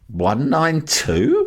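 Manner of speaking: fake bafflement, puzzled questioning tone. Recounting how a man reacted to the number: imitating a puzzled question. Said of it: "he just sort of went, 192? As if he'd never heard of it before".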